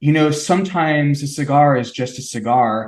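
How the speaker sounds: ordinary delivery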